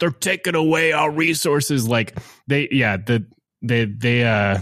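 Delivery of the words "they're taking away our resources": put-on New York Staten Island accent. Retelling press conference clips of police unions: imitating thick Staten Island accent. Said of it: "like the thickest Staten Island accent you've ever heard".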